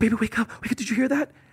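panicked, freaked-out tone. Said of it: "my wife freaked out".

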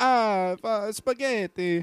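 hammy, put-on, fake Italian accent. Speaking a few words when asked to speak italian: fake italian accent. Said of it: "speak more Italian".

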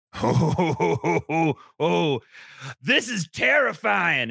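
shouting. Voicing a character who sees children drawing clocks: yelling. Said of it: "And he yells that back to everybody".

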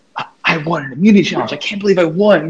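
high, thrilled, disbelieving excitement, acted out. Retelling how another player reacted after winning a challenge: imitating Brittany, so excited. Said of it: "you're so excited".

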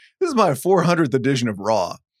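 ordinary talk

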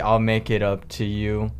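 normal talking voice

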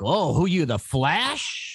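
put-on high, very slow, drawn-out old man voice. Imitating some old guy in an office: imitating an old guy. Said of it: "some old guy in your office would be like".

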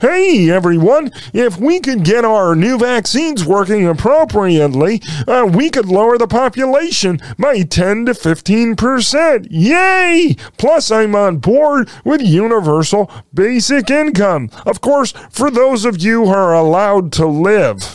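high-pitched, unhinged voice. Mock a man in a Mr. Rogers sweater addressing everyone, in a demented Kermit the Frog voice. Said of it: "talking like a demented Kermit the Frog".

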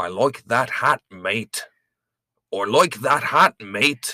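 amateur, attempted Australian accent. Trying out a podcast host's tip for the accent; attempted australian accent. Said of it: "the key to an Australian accent is saying".

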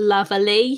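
put-on mock British accent.

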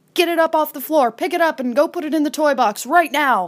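high-pitched, fast, frantic delivery. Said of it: "they're freaking out".

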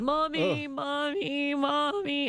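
acted, high-pitched sobbing small child's voice. Retelling a girl gripping the slats up high, crying out: imitating a girl crying for mommy. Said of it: "she's just crying like".

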